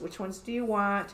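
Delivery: ordinary delivery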